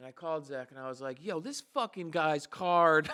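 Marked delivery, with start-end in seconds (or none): 1.2-3.1 put-on screaming outburst. Retelling a phone call about a card with a missing chip: imitating own past screaming. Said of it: "screaming, ab-, screaming at it".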